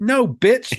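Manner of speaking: very high-pitched, shrill yelling. Retelling how the driver yelled when he grabbed the mic: retelling a yell. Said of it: "He yells at me".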